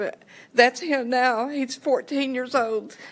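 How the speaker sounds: high-pitched, tearful speech through crying. Showing the group pictures from years ago and now, crying while speaking. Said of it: "I'm sorry to cry".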